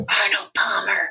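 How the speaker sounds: slow whisper, each word drawn out. In a shared story scene, a character answers a question about drinks: whispering slowly. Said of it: "I whisper slowly".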